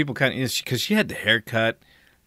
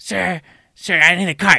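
put-on annoying shriek, higher; 8 semitones higher, 7 dB louder than usual. Speaker retells a woman demanding a cart from him, imitating an annoying shriek. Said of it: "this annoying shriek comes from behind me".

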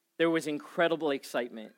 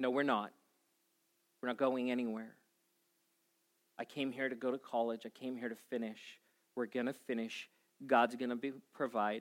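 imitated calm, even speech; 3 semitones lower, 8 dB quieter than usual. Retelling his wife's reply after he was done freaking out, acting out calm words. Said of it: "just very calmly said".

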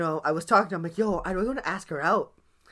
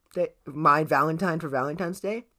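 ordinary talk

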